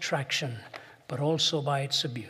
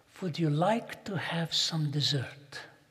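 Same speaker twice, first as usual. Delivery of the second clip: imitated sweet voice, slower. Retelling a lunch, the speaker quotes the waitress, imitating her sweet voice. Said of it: "she spoke in a sweet voice".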